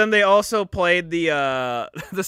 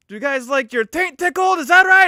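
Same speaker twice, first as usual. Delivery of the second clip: loud, very high put-on Italian mobster accent; 10 semitones higher, 6 dB louder than usual. Act out a man asking everybody a question before they scream, in an Italian accent. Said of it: "Like he was doing an Italian accent".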